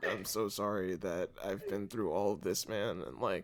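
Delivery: hushed, very quiet, mournful, sad throaty voice. Describing speaking without the diaphragm, all from the throat: sad throat voice. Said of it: "it's all sad throat voice".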